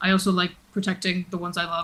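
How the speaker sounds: hushed, half-whispered aside. Speaking in character to Kratos: half-whispering.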